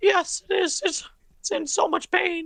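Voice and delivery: very high-pitched, squeaky cartoon-style voice. A character asked if his voice is dying answers, Mickey Mouse voice. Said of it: "stop being Mickey Mouse".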